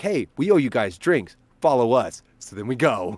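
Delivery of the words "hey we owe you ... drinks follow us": plain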